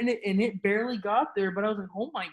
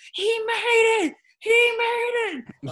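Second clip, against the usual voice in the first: very high, shrill, very slow, drawn-out screaming; 14 semitones higher, 8 dB louder than usual. Recalling screaming to someone on the phone when a putt dropped, retelling a scream. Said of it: "I just start screaming".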